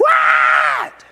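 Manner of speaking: mock fed-up, shrill, very high, loud exasperated voice. Retelling a TV scene, the mom finally answering: imitating a mom driven crazy. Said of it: "till she almost goes crazy".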